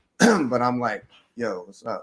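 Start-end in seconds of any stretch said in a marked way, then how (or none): 1.4-2.0 soft, laid-back, casual, cool-sounding voice. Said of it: "but I'm trying to be cool".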